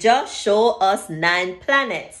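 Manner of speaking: normal talking voice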